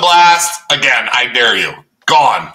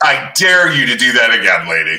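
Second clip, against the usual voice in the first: put-on evil villain voice; 3 semitones lower than usual. Doing an evil villain chair spin, addressing a lady in an evil villain voice. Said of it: "I don't want to sound like an evil villain".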